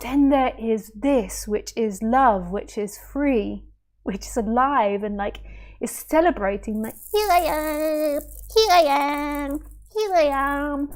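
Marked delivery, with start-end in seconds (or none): 7.1-10.9 high-pitched cartoonish voice, stretching out each "am". Describing love celebrating itself, saying it in a cartoon voice. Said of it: "With a cartoon voice".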